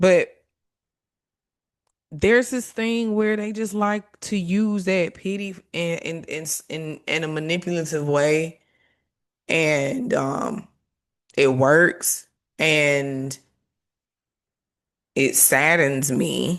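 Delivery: very slow, emotional voice, catching and cracking. Talking to listeners, voice cracking with emotion. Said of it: "you hear me getting a little cracky".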